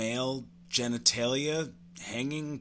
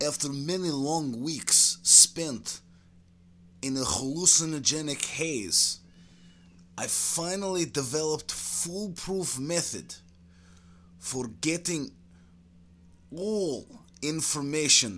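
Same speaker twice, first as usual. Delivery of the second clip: put-on comic Russian accent with broken English. A former KGB man recounts his interrogation work, in an ex-KGB Russian character voice. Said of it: "Circa 1987, KGB scientists came to conclusion that LSD does in fact enhance creativity. It was around this time the scientists started dosing you regularly with LSD. I guess maybe they were tired of old turnip jokes and wanted me".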